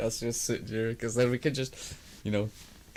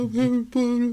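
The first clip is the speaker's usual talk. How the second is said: put-on boy wizard voice, much higher pitch; 14 semitones higher, 8 dB louder than usual. Answering what Harry's voice would be, Harry Potter voice. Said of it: "What would Harry's voice be?".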